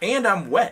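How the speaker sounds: high, loud, frantic protesting tone.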